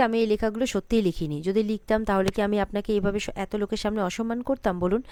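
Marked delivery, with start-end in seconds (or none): none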